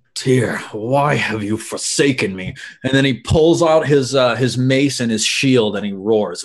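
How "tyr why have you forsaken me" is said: soft, grumbling mutter under the breath. Voicing a cleric whose spell just missed: muttering under his breath. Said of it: "he mutters under his breath".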